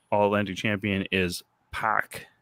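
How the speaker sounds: plain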